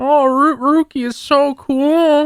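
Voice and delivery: drawn-out, high-pitched fawning voice. Imitating Renji gushing over a friend: Renji impression. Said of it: "That was a really good impersonation".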